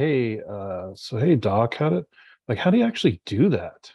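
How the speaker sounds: sidelong, halting, hesitant, confiding tone. Acting out people at a bar quietly asking a doc: imitating hushed tones. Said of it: "sort of in more hushed tones".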